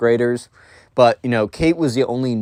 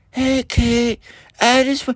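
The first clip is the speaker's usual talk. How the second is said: very high, rough stage whisper; 13 semitones higher than usual. Retelling a boy in class whispering to Kate, in a loud whisper. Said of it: "kept whispering, like, really loud".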